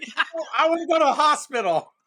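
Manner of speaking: mock yelling, pitched very high. Hanging upside down and hurt, speaker retells yelling back to a guy at the window: retelling a yell. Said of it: "And I just yelled back".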